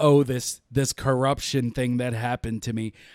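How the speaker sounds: ordinary talk, nothing marked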